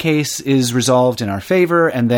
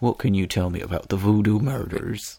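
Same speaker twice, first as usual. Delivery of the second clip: low, relaxed, easygoing cartoon-dog voice; 5 semitones lower, 7 dB quieter than usual. Imagining passing the bride at a wedding and asking a question, in a Huckleberry Hound voice. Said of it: "I don't know why you'd say it in that voice exactly. / as Huckleberry Hound. / Yep".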